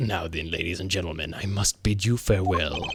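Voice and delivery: very deep, very low villain voice. Reading game dialogue aloud in a villain's put-on voice. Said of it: "cut off my".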